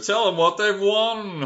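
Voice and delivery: very high, loud game show announcer voice. Announcing the next pick like a game show: game show announcer voice. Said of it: "I turn to a game show announcer".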